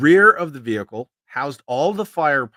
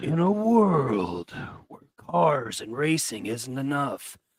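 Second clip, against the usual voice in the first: epic movie trailer narrator voice; 5 dB quieter than usual. Making up a film pitch with others, in a movie trailer voice. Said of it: "in your best movie trailer voice".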